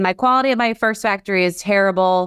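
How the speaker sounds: ordinary talk, nothing marked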